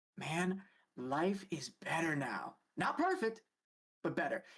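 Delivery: low, confiding voice. Narrating a scene, a character leans in toward the listener: lowered voice. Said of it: "lowers his voice".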